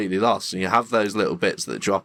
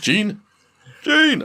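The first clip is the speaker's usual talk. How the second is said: put-on shouting, much higher pitched; 14 semitones higher, 5 dB louder than usual. Acting out familiar clips for another speaker, imitating Scott shouting. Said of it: "Scott just shouting".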